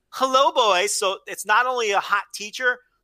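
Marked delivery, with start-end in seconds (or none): 0.2-1.0 mock teasing voice, high and loud. Retelling a teacher's greeting to boys in a trailer: imitating a teasing greeting. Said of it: "she's blatantly teasing the greasers".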